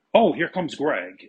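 loud, shouted, called-out yell. Retelling being spotted arriving by the group: retelling someone yelling. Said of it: "I heard somebody yell out".

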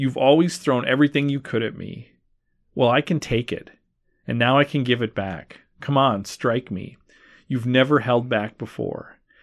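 normal talking voice

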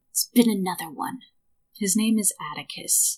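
loud, carrying stage whisper. Narrator voicing a man who pulls the listener aside at an inn door, whispering loudly. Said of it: "he whispers loudly to you".

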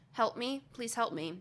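put-on calm tone. Reading out a distress call from a show: imitating a calm plea. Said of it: "this is how she says it, very calmly".

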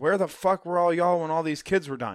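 scaled-down scream, a mild yell. Recounting a man confronting people about the kids who died: retelling a man screaming. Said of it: "And he's screaming at them".

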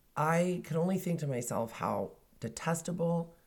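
ordinary talk, nothing marked

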